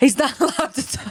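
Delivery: put-on New York Italian accent, laughing. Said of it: "He has a New York Italian accent".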